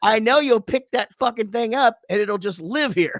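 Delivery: high-pitched, loud, yelled-out voice. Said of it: "just yells out".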